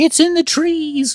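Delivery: shrill, very high screaming cry. Retelling a story, quoting one of the kids: imitating a kid screaming. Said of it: "one of the kids starts screaming".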